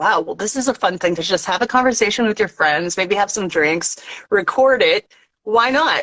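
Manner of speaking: ordinary talk, nothing marked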